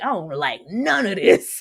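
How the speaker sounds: griping, complaining tone throughout. Retelling how Ray complained all episode: imitating Ray complaining. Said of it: "Ray was complaining the entirety of this freaking episode".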